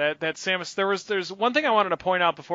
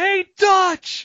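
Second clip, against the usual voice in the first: very loud, high, full-lunged shouting; 14 semitones higher, 8 dB louder than usual. Retelling calling out to a costumed Dutch: retelling a yell at the top of lungs. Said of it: "I just yell out at the top of my lungs".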